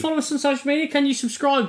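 high-pitched, desperate, begging tone. Asking listeners to follow and subscribe at the end of the show, desperate pleading. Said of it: "You sound so desperate".

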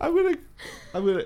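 very high, choked-up, tearful, broken voice. Telling a story to friends about a dog reunion, tearing up. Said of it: "you're tearing up".

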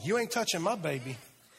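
fierce, protective mama voice. Imitating a protective mama guarding her baby: imitating a protective mama. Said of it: "that sounds like a mama".

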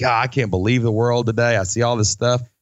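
ordinary delivery

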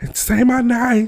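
put-on shrill, very high-pitched shriek. Speaker describes a man handed the mic, retelling a scream. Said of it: "he starts screaming".

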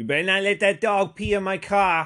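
put-on weird, loud, high, haggard old-lady Jersey accent. Retelling what a woman said by her soft-top car, haggard old jersey lady accent.

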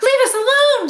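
very high, loud, squeaky little voice. Crouching low in the grass, one of the animals squeaks at the robot. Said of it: "squeaked Dart as he crouched low in the grass".

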